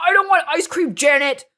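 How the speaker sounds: mock very loud, high, furious yell. Retelling a video where a husband refuses ice cream: imitating an angry outburst. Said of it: "they just get so angry".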